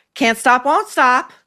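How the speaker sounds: pushy, obnoxious, high-pitched delivery. Retelling how a show's character answered the host: imitating an obnoxious character. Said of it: "the most obnoxious".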